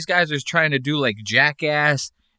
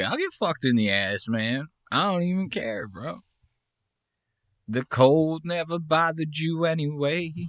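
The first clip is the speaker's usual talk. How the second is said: put-on dazed, spaced-out, slow drugged-up drawl; 6 dB quieter than usual. Imitating Jay, who looks drugged up and slowed down: sounding drugged up. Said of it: "He's like".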